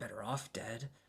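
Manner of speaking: very hushed, quiet dwarf-voice mutter under the breath. Voicing a dwarf under their breath after the kids answer: dwarf muttering. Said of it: "you hear muttering from the, from the dwarf".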